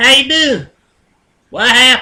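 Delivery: put-on country southern accent, loud and high. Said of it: "it just pops out".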